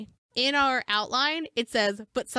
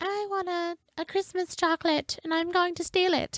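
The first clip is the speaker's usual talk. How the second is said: put-on creepy, pitched up, high, unsettling child voice; 8 semitones higher than usual. Acting out a thieving child, the speaker voices little Bobby in a creepy child voice. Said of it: "A very creepy child voice".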